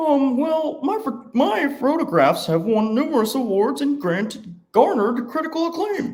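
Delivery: very high, loud cartoon turtle voice. Playing the photographer answering Fulton's agent in a cartoon scene, turtle voice. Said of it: "personify what I think a turtle sounds like".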